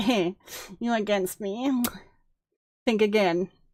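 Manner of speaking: put-on gloating, smug, self-satisfied know-it-all voice. Reacting to a video and mocking Max's tone of voice: smug voice imitating Max. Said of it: "you are way too smug about all this. You're like".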